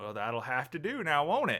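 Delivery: patched-together fake cowboy accent. The speaker answers in character, slipping between different cowboy voices. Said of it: "slipping between different cowboy voices".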